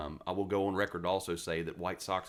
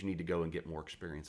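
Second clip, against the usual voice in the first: plain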